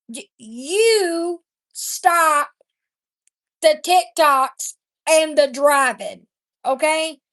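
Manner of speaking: slow, deliberate, spelled-out, with "you" drawn out. Speaker addressing a woman who makes TikToks, talking slow. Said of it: "I'm going to talk slow".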